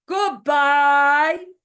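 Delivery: very loud, booming, big bear-like voice.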